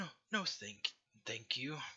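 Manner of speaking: put-on frightened, hesitant, scared old woman's voice. Voicing an older tiefling woman refusing a priest's offer: scared old woman. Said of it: "she seems scared".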